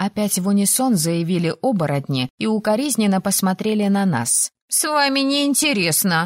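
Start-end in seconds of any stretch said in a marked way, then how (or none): 4.7-6.3 high, hot, flaring outburst. After the werewolves answer in unison, Penny speaks to them, flaring up. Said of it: "вспыхнула Пенни".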